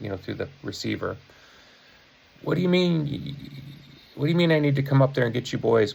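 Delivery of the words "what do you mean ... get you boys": yelling in a high pitch. Retelling what the companion's dad said over the phone: imitating a dad yelling. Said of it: "hear his dad yelling".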